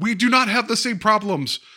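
put-on very high, shrill, protesting shout. Retelling a woman running out of the room after another woman; retelling a yell. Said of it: "She's running out of the room yelling".

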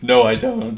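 cracking, breaking voice. Asked whether they want to light a candle, answering with a voice crack. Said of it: "That was a voice crack".

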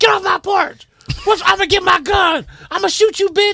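shrill, very high, angry screaming yell. Retelling a video, the speaker acts out a mom on her porch, mock cussing-out as a mom. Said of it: "the woman is cussing her out".

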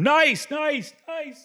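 mock yell, high-pitched and loud.

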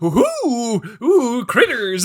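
crazed babbling with a drawn-out ooh. Describing a weird character who babbles then scampers away, imitating a crazy babbling woods man. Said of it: "like a crazy cracked out man from the woods".

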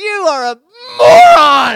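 mock very loud, very slow, furious, drawn-out yell. Speaker retells yelling at a guy who wasn't there: retelling an angry yell. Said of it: "I yelled at this guy who wasn't even there that he was a moron".

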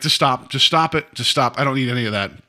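ordinary delivery

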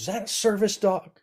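high-pitched, accusing half-yell. Retelling a stranger questioning about a service dog: imitating someone yelling. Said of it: "kinda yells at me".

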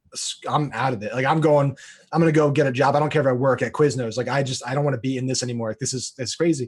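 ordinary delivery

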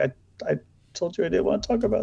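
very high, giggly, embarrassed, laughing through the words. Retelling how she answered an unwanted question, retelling embarrassed giggling. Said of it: "She's just like laughing and like giggling".

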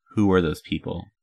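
plain reading voice

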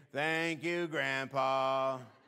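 flat, bored, underwhelmed, dutiful monotone. A grandfather mimicking his grandkids thanking him for a gift: imitating grandkids' monotone. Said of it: "they go into that little monotone thing".

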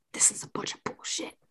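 hushed whisper. Playing a character who whispers a complaint into another's ear: whispering in someone's ear. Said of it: "Desiree whispers in her ear".

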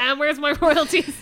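shrill, very high, very loud, furious raging. Imagining the artists hearing the podcast, imitating raging artists. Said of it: "Ellie and Louise are there raging".

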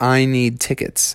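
usual speaking voice

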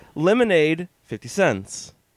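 ordinary talk

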